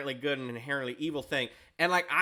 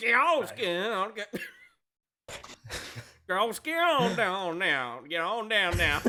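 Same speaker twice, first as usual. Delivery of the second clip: put-on guttural, growled Southern accent, raised pitch; 6 semitones higher than usual. Narrator voicing a character urging on a roped dragon, southern accent, guttural growl. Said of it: "but like with a southern accent".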